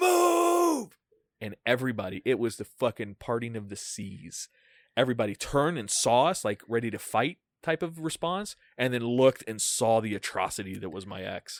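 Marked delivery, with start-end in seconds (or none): 0.0-1.0 very high, booming, drawn-out bellowing yell. Retelling how a bouncer cleared a crowded club: imitating a booming shout. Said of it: "He gets this fucking booming voice".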